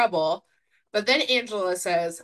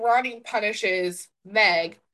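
plain

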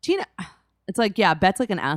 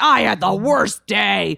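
put-on pirate voice, higher and louder; 5 semitones higher, 6 dB louder than usual. Retelling how Bet talks over Tina: imitating Bet as a pirate. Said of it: "Also, she's a pirate, I guess".

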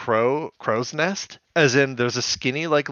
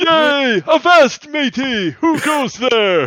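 put-on childlike voice, higher and louder; 12 semitones higher, 6 dB louder than usual. Imagining a scene where a character gets to play pirate: Scorponok impression acting about ten. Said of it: "I act like he's about ten when I'm doing my impressions".

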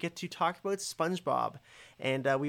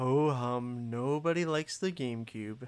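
character voice, every word dragged out very slowly; 3 semitones lower than usual. Showing how the Eeyore version of the ad line goes: Eeyore voice. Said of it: "but Eeyore's is".

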